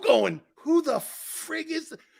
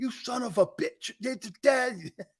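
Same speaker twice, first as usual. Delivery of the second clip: breathy whispered yell with angry screaming quality; 3 semitones higher, 4 dB quieter than usual. Retelling how a coach screamed at the players: imitating Buddy Ryan screaming. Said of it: "Buddy Ryan would scream at you".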